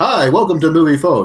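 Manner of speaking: high, joyful, gleeful put-on announcer voice. Imitating him reading movie listings: mock-gleeful Moviefone voice. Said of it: "with joy and glee".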